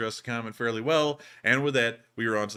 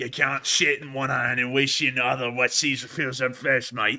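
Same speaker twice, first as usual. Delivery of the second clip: terrible, fake, put-on Australian accent; 2 semitones higher, 4 dB louder than usual. Repeating an old Aussie saying uncensored: terrible Australian accent. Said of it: "that was a terrible Australian accent".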